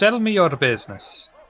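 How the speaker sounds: bad, clumsy put-on Russian accent. Voicing Vanya stepping out onto the wharf: bad Russian accent. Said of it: "I'm so ashamed of this accent".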